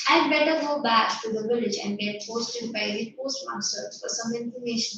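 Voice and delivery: plain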